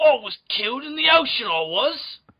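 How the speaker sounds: bad Australian accent, pitched high. Joking in Steve Irwin's voice: bad Steve Irwin impression. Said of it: "That just sounds medieval British".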